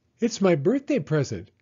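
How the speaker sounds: proud, showing off. Rose, the little girl next door, tells Walter while watering a new tree, proud. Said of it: "she said proudly".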